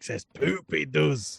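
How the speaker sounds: put-on Scottish accent. Riffing during a podcast episode with a co-host, in a Shrek Scottish accent. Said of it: "I appreciate your Mike Myers Shrek Scottish accent".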